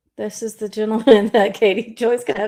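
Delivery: giggling partway through the words. Introducing the opponent Katie Joy will face, laughing while talking. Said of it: "I laugh every time".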